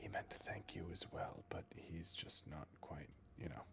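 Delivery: hushed, barely audible whisper. Playing a character who whispers to another character after a door closes, whispering. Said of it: "Marcus is gonna whisper to Zachary".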